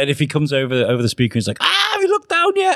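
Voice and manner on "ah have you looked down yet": put-on very high, panicky announcer voice. Retelling a comedy joke, a captain on the speaker: imitating a panicking captain. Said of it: "he's, like, panicking".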